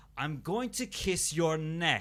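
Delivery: different fake American accent, bad, slow, drawn out. Recounting actors playing Dracula in a series of rooms: Romanian actor's bad American accent. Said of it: "the voice clearly changes to".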